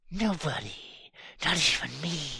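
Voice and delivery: high hissing snake voice, sibilant through every word. Reading the rattlesnake's line in a story about a distrustful rattler, hissing. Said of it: "the rattler hissed".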